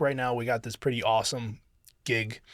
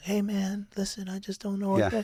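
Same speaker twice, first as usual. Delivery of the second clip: gentle, easy, slightly pitched-up voice; 9 semitones higher than usual. Showing how someone trying to stop a situation sounds: imitating a soft, gentle approach. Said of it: "coming from it from, like, a soft place".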